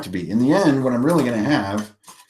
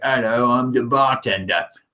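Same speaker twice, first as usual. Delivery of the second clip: slow, unhurried put-on Cockney accent; 7 semitones higher than usual. Showing how to use one voice for every character, as a tavern bartender: Cockney accent. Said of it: "this Cockney accent".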